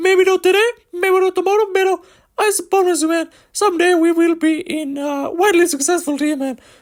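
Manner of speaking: fake voice pushed very high and squeaky. Ranking fighting nations, wrapping up on Mexico: high-pitched put-on voice.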